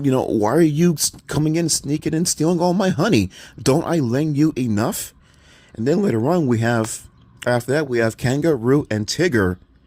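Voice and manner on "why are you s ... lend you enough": sputtering complaining tone, tripping over words. Retelling a cartoon scene where Rabbit confronts Pooh Bear: imitating Rabbit sputtering. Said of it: "then he sputters to him like".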